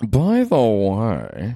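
secretive, conspiratorial, swooping, drawn-out tone. Speaker shows how they like saying a phrase, conspiratorial tone. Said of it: "I love to say by the way in a conspiratorial tone".

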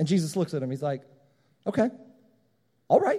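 ordinary delivery

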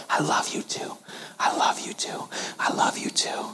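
put-on hushed, murmuring little-girl whisper under the breath. Retelling how a little girl whispered during a time of silence: imitating a child whispering. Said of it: "began to whisper under her breath".

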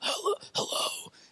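groggy, just-woken, breathy whisper. Telling of waking a staff member by phone, imitating a groggy, just-woken voice. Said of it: "they're groggy and they're like".

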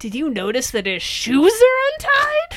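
serious, intense, very high, barely held-back horror. Retelling a character's breakthrough line: imitating barely restrained horror. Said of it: "serious, like, barely restrained horror and intent".

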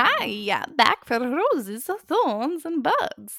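odd, weird put-on voice, pitched high. Introducing the roses, thorns, and buds segment in a weird voice. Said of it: "That was a weird voice".

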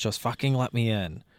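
ordinary talk, nothing marked

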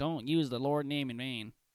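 put-on prim, disapproving, preachy scolding tone. Retelling what a scolding person says: mocking imitation of a scold. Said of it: "That's what they sound like when people say".

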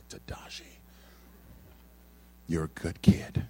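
solemn, slow, low, breathy near-whisper, pastor-like. Retelling what his pastor used to say to him, imitating the pastor's low somber voice. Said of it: "he was really low in voice, somber".

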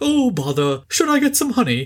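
very high, swooping, sing-song cartoon bear voice. Discussing Sterling Holloway's voice work in the films, a host mimics him: Pooh voice. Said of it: "doing his Sterling Holloway poo voice".

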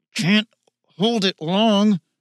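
forced out between clenched teeth. Narrator reads Michael's urging line, said through gritted teeth. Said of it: "said through gritted teeth".

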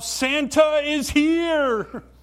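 very high, loud, drawn-out yell. Retelling the mall manager's announcement to everybody, retelling a yell. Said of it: "he yells out".

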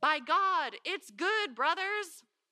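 high, loud shouted yell. Retelling eating muddy bread, then calling to friends: retelling a yell to friends. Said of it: "I yelled to my friends".

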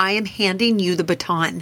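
ordinary talk

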